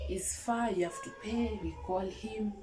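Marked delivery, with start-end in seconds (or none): none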